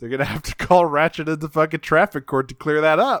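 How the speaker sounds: usual speaking voice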